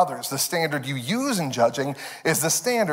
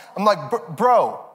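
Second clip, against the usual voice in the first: normal talking voice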